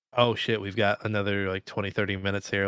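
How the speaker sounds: ordinary talk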